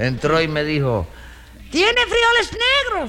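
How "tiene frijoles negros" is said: put-on squeaky, very high-pitched older lady's voice. Telling a story about a customer at the bodega, imitating Nananina's voice. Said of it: "¿yo hablo así con esta voz?".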